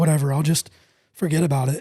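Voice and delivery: ordinary talk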